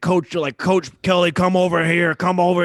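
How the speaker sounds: put-on drunk voice, loud and high, calling out. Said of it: "He, he was drunk".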